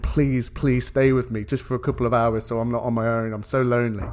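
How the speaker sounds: pleading, begging voice. Retelling a comic scene where she begs him to stay: imitating someone begging. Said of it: "begging him".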